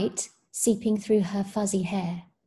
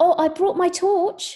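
very high, loud, eager, excited exclamation; 10 semitones higher, 5 dB louder than usual. He calls out before the expedition, excited cry. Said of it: "he cries excitedly".

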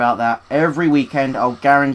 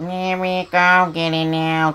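higher, weird little droid voice; 5 semitones higher than usual. A player controlling a droid engineer voices the droids, weird little droid voice. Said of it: "They've got this really weird little voice".

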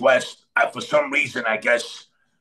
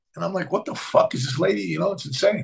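plain

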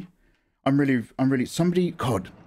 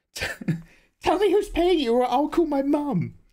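put-on very high, slow, childish nine-year-old voice; 14 semitones higher than usual. Repeating a line in the most childish nine-year-old voice. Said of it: "the most childish nine-year-old voice".

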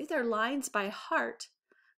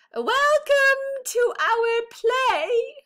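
much louder, pitched-up, raised call with "play" stretched; 12 semitones higher, 12 dB louder than usual. Goodly repeats his welcome to an audience that isn't listening, louder voice. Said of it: "he tried again in a louder voice".

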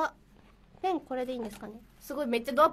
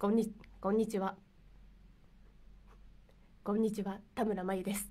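dropped, deep, low, soft voice; 4 semitones lower, 5 dB quieter than usual. A greeting and self-introduction done in a deep, low voice. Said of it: "これが低くなってる".

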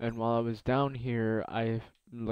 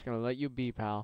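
ordinary talk

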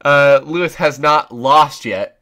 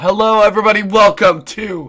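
voice cracking out, higher; 7 semitones higher than usual. Opening a broadcast, voice suddenly giving out. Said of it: "my voice just died out of nowhere".

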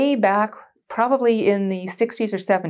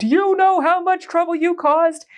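acted-out furious roar, pitched very high; 10 semitones higher, 3 dB louder than usual. Recalling standing shaking in his office while he tore a strip off: retelling a roar. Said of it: "he's got this roar".

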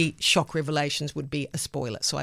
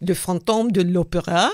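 bad, over-the-top, exaggerated put-on French accent; 2 semitones higher, 4 dB louder than usual. Naming the novel behind the musical, bad french accent. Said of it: "let me try this in a bad French accent".

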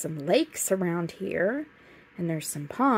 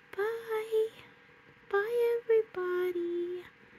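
put-on tiny, squeaky, very high little-kid doll voice; 3 dB quieter than usual. Role-playing a toddler doll saying bye to viewers: Penny toddler doll voice. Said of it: "Can you say bye, Penny?".

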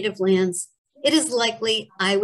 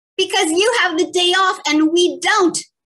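very high, loud, shrill, booming roar; 9 semitones higher, 5 dB louder than usual. Reading a story: in a classroom, answering the narrator's dad; bellowing. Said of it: "Mrs. Belowski bellowed".

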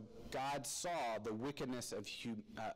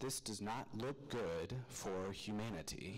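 narrator-style storytelling delivery. Pausing a Bible passage to comment on it: best narrator voice. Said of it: "Said in my best narrator voice".

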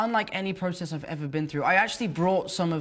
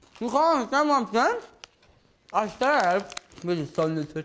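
mumbling with mouth full, much higher pitch; 3 semitones higher than usual. During a take, eating chips so the scene partner can't understand you, talking with mouth full. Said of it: "let's do one without the chips".

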